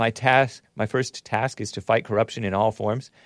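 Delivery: ordinary talk, nothing marked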